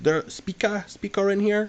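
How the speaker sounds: very high, slow, halting put-on broken-English accent. Retelling what an Uber driver said, standing between the cars: mocking his accent. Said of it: "I shouldn't mock his accent".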